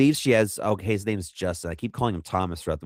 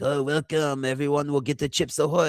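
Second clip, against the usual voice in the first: put-on French shopkeeper accent, pitched up; 7 semitones higher than usual. Speaker retells someone welcoming hunters to the shop: put-on french accent. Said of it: "giving them a French accent".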